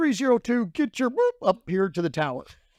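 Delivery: acted-out yell, high pitch. Retelling how the boss yelled an order on landing: imitating the boss yelling. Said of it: "the boss is yelling at me".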